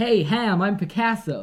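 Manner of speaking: bad fake American accent. Acting out someone greeting ham, in a terrible put-on american accent. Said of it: "Sorry for the terrible American accent".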